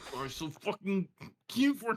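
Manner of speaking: put-on barely contained rage. Acting out what he said while holding off a rage; mimicking suppressed rage. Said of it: "holding off a rage".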